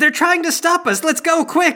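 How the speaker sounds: very high-pitched, urgent, loud shout. A game master narrating a scene, voicing Robert shouting. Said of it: "Robert shouts".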